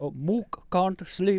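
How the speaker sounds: clumsy put-on Indian accent. Trying a german accent on request, coming out as a bad indian accent. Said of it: "a bad Indian accent".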